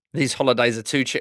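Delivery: plain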